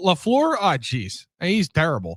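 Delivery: broad, thick, drawn-out put-on northern Wisconsin accent. Imitating callers breaking down the film after a loss: thick northern Wisconsin accent. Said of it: "with a thick northern Wisconsin accent".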